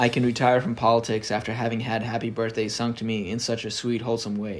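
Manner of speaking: ordinary talk, nothing marked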